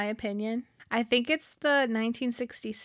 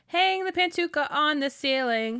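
plain

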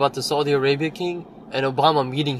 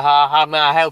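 put-on Southern Tennessee girl's accent, raised voice; 6 dB louder than usual. Retelling how a girl in tennessee greeted him: imitating a tennessee accent. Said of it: "I wouldn't care if she had that accent".

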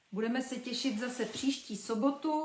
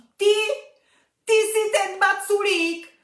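very high, full-volume, shrill, terrified shout; 9 semitones higher, 13 dB louder than usual. A girl, startled by a small pink creature on her chest, shouts in fright. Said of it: "křičela vyděšeně Verča".

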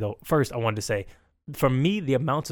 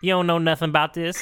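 put-on lady character voice; 4 semitones higher than usual. Offering food to the other speaker, imitating an aunt: sounding like lady Cleveland. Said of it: "Why do you sound like a Gail Cleveland?".

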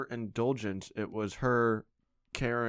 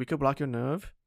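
put-on Indian accent, pitched up; 5 semitones higher than usual. Retelling what a doctor in New Jersey told them, imitating an Indian accent. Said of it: "i can't even do like indian accents anymore but he's like".

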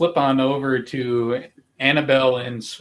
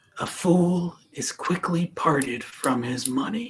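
soft whisper, close to the ear; 4 semitones higher, 4 dB quieter than usual. A character takes two coins and has you bend down, whispering. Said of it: "goes to like whisper".

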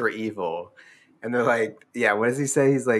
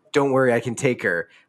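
mock whisper, put-on whispered voice. Retelling what a character whispers to her professor: imitating a whisper. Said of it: "whispers to her professor".

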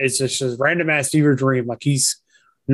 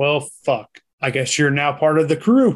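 put-on indifferent voice. Imitating an actor's reaction to his son's return: Anthony Hopkins, couldn't be bothered. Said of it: "Anthony Hopkins like".

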